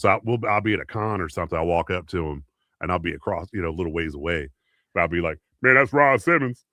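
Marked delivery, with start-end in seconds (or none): 5.6-6.5 loud, pitched-up, big-voiced carrying call. Retelling greeting a wrestler across a con in his voice: Ron Simmons impression. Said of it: "do an impression of him like that".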